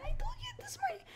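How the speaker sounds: high whispered voice. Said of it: "and I'll say".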